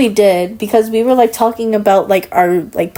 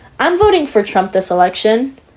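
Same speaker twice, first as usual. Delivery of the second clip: usual speaking voice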